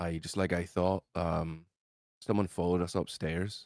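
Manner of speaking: quiet, hushed tone. A character shuts the door and speaks to everyone inside, hushed tone. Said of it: "in a hushed tone to everyone inside".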